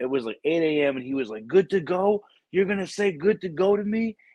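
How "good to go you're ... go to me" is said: mock angry sergeant major outburst, flipping out, pitched up. Retelling the sergeant major's reaction on a conference call: imitating someone flipping out. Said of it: "the sergeant major just flipped out".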